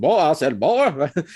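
thick cartoon rooster voice. Show how you gotta do it, in a thick, full-on Foghorn Leghorn voice. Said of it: "thick with the full on foghorn leghorn".

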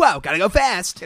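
very loud, high, fast-sounding shouting voice. Two speakers discuss the voice for impersonating Sonic: Sonic impression. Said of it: "the voice you do when you're trying to impersonate yeah, Sonic".

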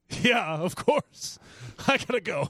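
amazing stage voice.

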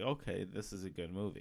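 plain

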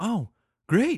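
play-acted excited, thrilled, high-pitched voice. Retelling his wife's reply when asked to play along: imitating someone excited. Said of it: "Then she got all excited".

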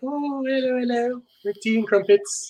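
put-on English accent, pitched a bit high. Explain why she comes off as personal by putting on Joanna Penn's English accent. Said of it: "It might be the English accent".

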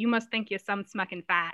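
put-on Maine accent. Quoting a phrase the speaker's mom always said, in a Maine accent. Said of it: "perfectly sums up the Maine accent".

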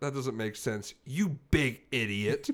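mock sincere, earnest tone. Retelling a phone call where she called the speaker an idiot: imitating a sincere insult. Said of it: "she sounded so sincere".

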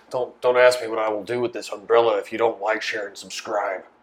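grizzled, menacing, threatening changed voice. Retelling a granny's umbrella threat: imitating a grizzled threatening voice. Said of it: "She sounded like that too, all grizzled".

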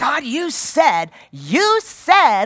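very slow, loud, drawn-out, bratty accusing whine. Showing how not to come to God in prayer: an accusing tone. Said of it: "in an accusing tone".

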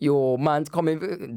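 put-on casual Jamaican accent. Showing how Jamaicans talk: Jamaican accent. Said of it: "Jamaicans are gonna be like".

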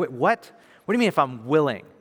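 normal talking voice

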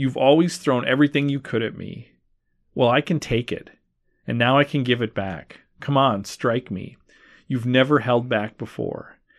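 ordinary talk

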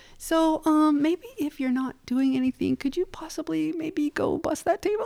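mock very high, syrupy-nice, sugary tone. Speaker retells how he would ask them to do things, imitating him overly nice. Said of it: "He would say it so nice".

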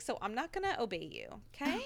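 ordinary talk

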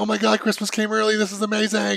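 put-on high, gushing, thrilled, delighted excitement. Retelling a friend's reaction to a surprise gift: imitating someone excited. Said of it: "she was so excited".

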